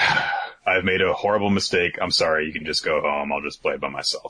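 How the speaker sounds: ordinary talk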